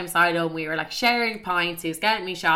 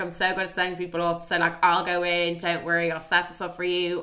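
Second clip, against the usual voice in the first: normal talking voice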